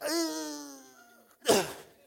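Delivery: high, strained grunt. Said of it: "they just went".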